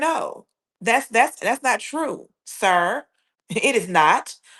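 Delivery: definitive, flat, firm and bold contradiction. Showing how to answer a false accusation: bold, definitive denial. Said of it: "I'm gonna do it just like how I'm telling you".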